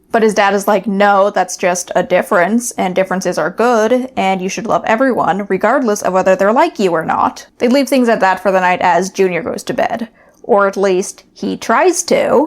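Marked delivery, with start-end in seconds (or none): none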